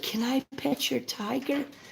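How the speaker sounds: put-on very high, soft, creaky, cutest small-child voice. Retelling what a little kid said to the speaker, in the cutest little kid voice. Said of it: "in the cutest little kid voice".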